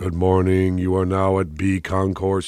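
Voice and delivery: flat, monotone, droning announcer voice. Recalling the early FM radio style, demonstrating it as the Atlanta airport announcement drone. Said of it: "it sounds like the Atlanta airport drone".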